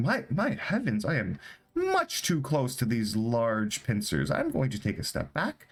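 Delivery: jumpy, startled, frightened swooping voice. Voicing Roderiff while the others want to eat the crabs: Roderiff, spooked. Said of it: "Roderiff is gonna like get spooked".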